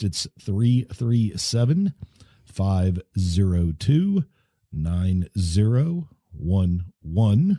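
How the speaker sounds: very slow, deliberate, spelled-out delivery. Podcast host giving listeners the show's phone number, said very slowly. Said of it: "I said that very slowly".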